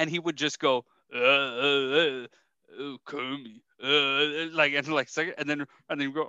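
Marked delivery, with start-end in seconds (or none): 1.1-4.5 very slow, stretched, dragged-out uh sounds. Retelling a comedian's joke impression bit: Sylvester Stallone impression. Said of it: "my impression of, uh, Sylvester Stallone".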